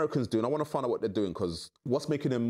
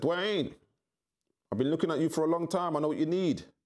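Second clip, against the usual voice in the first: best-attempt put-on American accent, pitched up; 5 semitones higher than usual. Retelling what a man in Miami said to him, American accent. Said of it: "In my best American accent".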